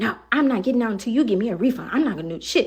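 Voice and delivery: mock-irate, put-on angry voice. A driver retells what his passenger said from the backseat, retelling an irate passenger. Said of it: "She is irate in the backseat".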